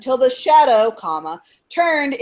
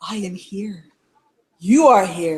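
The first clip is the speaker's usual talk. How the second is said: hushed whisper, lower pitch; 6 semitones lower than usual. Retelling a witness's account of a shadow thing speaking to them, whispering. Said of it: "It whispers to me".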